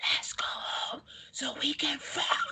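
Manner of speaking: breathy, hushed whisper. Retelling being too loud at the bar, the speaker acts out trying to whisper instead. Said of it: "So I tried whispering".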